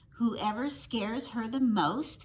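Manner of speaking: plain reading voice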